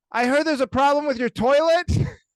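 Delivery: shrill, very loud, high-pitched shout. Retelling how a housekeeper yelled through the door, retelling a yell. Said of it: "And then she yells".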